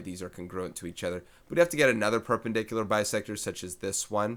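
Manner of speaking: a little fast, quick, rushed delivery.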